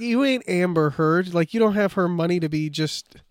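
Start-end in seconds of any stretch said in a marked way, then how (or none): none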